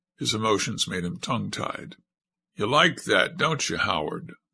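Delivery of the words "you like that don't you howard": lovingly murmured, tender and affectionate. Montezuma speaks to Howard, murmured with tender affection. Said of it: "murmured Montezuma with tender affection".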